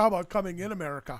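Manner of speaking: poor put-on Swedish accent. Telling about Tomas coming to America, imitating Tomas in a bad Swedish accent. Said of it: "That was not a Swedish accent".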